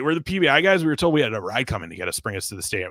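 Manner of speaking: mock heavy sarcasm played dead serious. Recounting what was said to a parking lot attendant, retelling a sarcastic line. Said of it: "I said it so sarcastically too".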